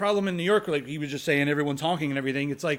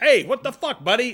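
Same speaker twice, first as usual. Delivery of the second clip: mock yelling, higher and louder; 8 semitones higher, 7 dB louder than usual. Acting out a driver yelling at a car stopped in the road: imitating a yelling driver. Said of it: "the whole yelling and flicking off".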